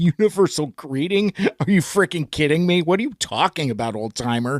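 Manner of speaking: very sarcastic, scoffing, swooping incredulous tone. Retelling Hot Rod's reply to the universal greeting: imitating Hot Rod sarcastically. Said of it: "he says very sarcastically".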